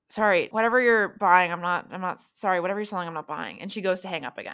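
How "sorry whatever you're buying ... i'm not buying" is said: drowsy, groggy, half-asleep, just-woken voice. Retelling a phone call to M at 3 in the morning, imitating M's groggy answer. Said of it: "you hear it very groggily like".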